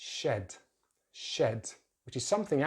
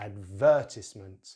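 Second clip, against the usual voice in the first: advertisement with weight on second syllable ver; 4 semitones lower, 4 dB louder than usual. Teaching the British pronunciation of advertisement: stress on second syllable, ver. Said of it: "So we put the stress on the second syllable".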